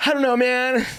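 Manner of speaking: mock-panicked voice. Retelling answering a man who asked what he was doing, retelling own panic. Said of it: "I'm like, so panicked".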